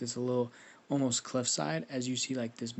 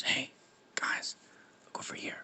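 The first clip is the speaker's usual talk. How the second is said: breathy, barely voiced whisper. Narrating a game scene, voicing a character calling the others over, whispering. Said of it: "as Jericho whispers".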